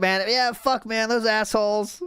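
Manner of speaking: relaxed, easygoing, fond grumble with no anger. Imitating another speaker recalling an old annoyance: an unbothered, fond grumble. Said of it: "there's no anger in this dude's voice".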